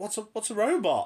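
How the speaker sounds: panicky, stumbling, very high panicked voice. Retelling how a woman reacted to a kid's answer, imitating a panicked question. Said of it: "panicking because obviously".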